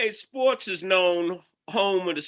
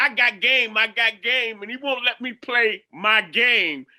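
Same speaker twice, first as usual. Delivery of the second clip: put-on tearful crying voice, higher pitched; 3 semitones higher than usual. Retelling a young player's complaint about the bench: imitating someone crying. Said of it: "he was crying".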